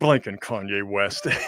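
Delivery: put-on muttering under breath. Retelling what Mark said before going live: imitating Mark muttering under his breath. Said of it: "He just mutters under his breath".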